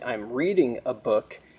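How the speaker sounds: ordinary delivery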